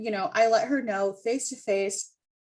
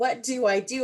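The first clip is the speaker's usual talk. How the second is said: play-acted, tearful crying voice. Retelling crying to family for advice: imitating own crying. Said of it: "crying to my family".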